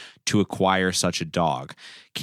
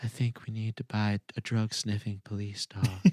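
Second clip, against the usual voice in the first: gentle, soft-spoken, hushed voice; 7 dB quieter than usual. Retelling a new police chief's request to the council, in a soft voice. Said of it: "in her soft voice".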